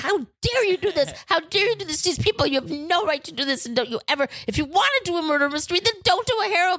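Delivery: outraged, high-pitched screaming tirade. Retelling a confrontation after another team got bumped, the speaker re-enacts screaming at them. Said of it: "I'm screaming at them and going".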